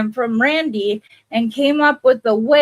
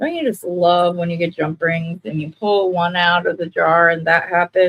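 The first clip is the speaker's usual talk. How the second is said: mock-delighted, sarcastic tone; 4 semitones lower than usual. Pulling a jump ring from the jar and complaining: sarcastic. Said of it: "Being completely sarcastic, of course".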